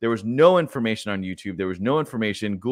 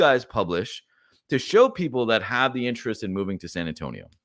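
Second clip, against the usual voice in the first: usual speaking voice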